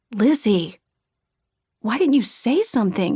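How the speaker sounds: insistent, demanding tone. Reading a story, a friend learning of a dog bite: demanding. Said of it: "he demanded".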